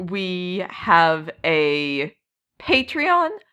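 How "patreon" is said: voice breaking oddly, cracking very high. Promoting a Discord server and Patreon to listeners, voice cracking weirdly. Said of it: "my voice cracked weird".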